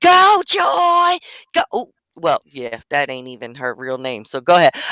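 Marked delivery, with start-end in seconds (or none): 0.0-1.6 mock, very high-pitched cheering scream. Retelling filming her daughter's race: retelling her own screaming. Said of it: "but I'm also screaming".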